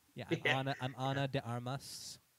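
slow, drawn-out, entitled voice. Imitating how the actress talks in real life: Ana de Armas Karen voice. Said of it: "She just sounds like a total Karen".

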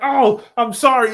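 groveling, pathetic, pleading tone. Retelling a movie scene where a character begs: imitating someone begging for life. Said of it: "begging for his life like a fucking chump".

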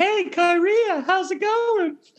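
very high, slow, reedy, mocking teasing voice. Retelling how a ruler teased a guard: mocking high reedy voice. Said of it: "tease him 'cause he had a high, reedy voice".

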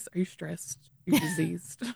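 whispered, dropped-down voice, near whisper. Retelling being asked whether they were sick, the speaker uses a lowered voice. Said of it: "lowers voice".

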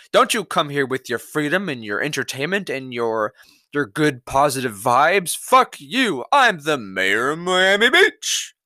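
completely serious, official delivery. Mocking the mayor's warning to tourists: mock dead-serious Dan Gilbert. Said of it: "he's so dead serious".

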